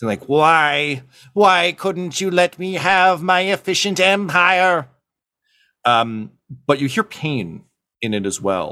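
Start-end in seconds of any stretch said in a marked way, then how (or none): 0.2-4.9 put-on raging chorus voice, much higher. Describing a character's transformation, speaker acts out its line: mock-raging chorus voice. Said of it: "chorus of voices ... vibrating with rage".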